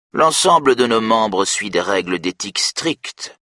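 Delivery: scornful, superior, disdainful, dismissive delivery. The president answers a question about the affair with disdain. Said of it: "répond-il avec dédain".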